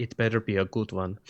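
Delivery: put-on French accent sliding into a Russian accent. Voicing Adeline answering a plan: French accent slipping into Russian. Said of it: "the French accent is becoming Russian".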